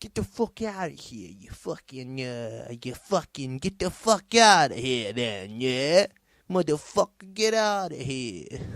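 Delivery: bad, gross put-on American accent, yelling. Acting out what she should have said to him, in a woefully bad accent. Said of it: "Giving him that old gross fucking accent".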